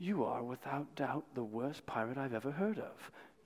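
put-on snide, snarky, sneering English accent. Retelling a film scene, quoting an admiral: snarky English accent. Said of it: "in a snarky English accent".

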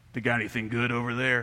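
gruff, rough-edged voice. Retelling a woman's question from her car window, imitating a gruff voice. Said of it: "With that sort of gruff voice".

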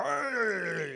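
loud, very high, creaky, drawn-out, jovial "hey". Describing a preacher who is always happy, act out his greeting, imitating jovial Chuck Swindoll. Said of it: "he's always normally just really jovial".

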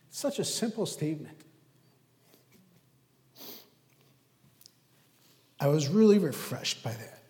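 tearful voice, crying while speaking. A speaker reflects on a quoted statement to listeners; crying while speaking. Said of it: "Even though I'm crying".

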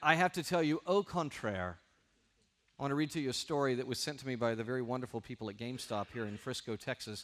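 ordinary talk

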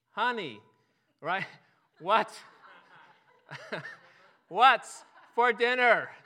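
drawn-out calling, loud, slow and high-pitched. A man goes right next to a woman who isn't responding: retelling a louder, slower call. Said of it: "got louder and slower".

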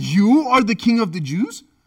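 put-on, loud, sarcastic, incredulous, mocking, disbelieving tone. Quoting Pilate questioning Jesus: imitating Pilate's mocking disbelief. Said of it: "there is sarcasm here. There is disbelief. There is mockery here".

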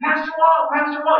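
very high, loud hollering shout, as if calling across a distance. Retelling how a woman called across a parking lot: imitating a woman shouting. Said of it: "She was shouting at the top of her voice".

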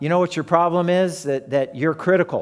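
normal talking voice

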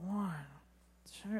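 hushed, very quiet, low, barely audible muttering. Retelling how push-ups were counted in PE class: imitating own quiet counting. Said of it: "I would just say the number really low".

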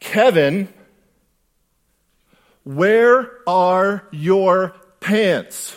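high, very loud, very slow public call-out. Retelling a classmate calling out to the whole class: imitating someone saying loudly. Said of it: "she says really loudly, so everybody could hear her".

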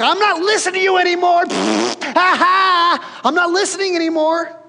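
put-on very high, loud childish toddler yell. Preaching on a verse, the speaker acts out people covering their ears: imitating childish yelling. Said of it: "they covered their ears and they're yelling".

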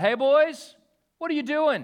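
very loud, high-pitched holler. Retelling calling out from a truck window to some guys: retelling own yell. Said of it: "just yelled out".

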